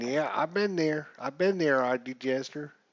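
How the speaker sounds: attempted Boston accent that lands Southern. Imagining someone watching the game, attempting a failed boston accent that sounds southern. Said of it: "that was a Southern accent".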